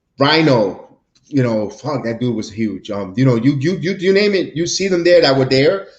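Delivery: normal talking voice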